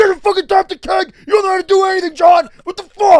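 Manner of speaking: play-acted, very loud, very high-pitched furious yelling. Retelling a friend's outburst over a foaming keg: imitating Hogan freaking out angrily. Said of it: "He's freaking out".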